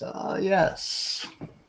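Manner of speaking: put-on grandfatherly elderly man character voice. In a print shop scene, the narrator voices an approaching old man: grandfatherly old man voice. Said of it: "an old man with a grandfatherly face comes up to you and says".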